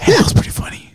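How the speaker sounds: soft, hushed whisper, very close in. Retelling whispering comments to a friend during movies: imitating own whisper.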